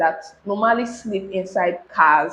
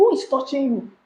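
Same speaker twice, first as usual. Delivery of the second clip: mock startled, high, alarmed cry; 6 semitones higher than usual. Retelling how a driver reacted on hearing what the speaker said, retelling a shout. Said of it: "the first thing he shouted was".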